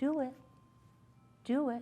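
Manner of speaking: very soft, gentle, hushed coaxing murmur. Showing how to cue a squatting puppy: saying it very softly. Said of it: "I just very softly say".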